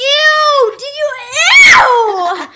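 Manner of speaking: very high, very slow yelling with stretched ew. Reacting to another speaker saying he fixed it, yelling. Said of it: "I'm sorry I'm yelling a lot".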